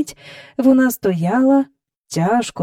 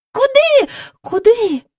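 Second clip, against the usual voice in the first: very high, high-pitched cried-out voice; 12 semitones higher, 4 dB louder than usual. Narrator voicing Jane and Michael crying out together in a read story, cried out. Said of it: "скрикнули разом Джейн і Майкл".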